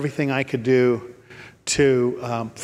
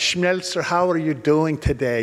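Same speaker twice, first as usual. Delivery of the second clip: put-on elderly woman's Swedish accent; 3 semitones higher than usual. Speaker imitates an old Swedish lady from church: Marie's Swedish accent. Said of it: "in her Swedish accent".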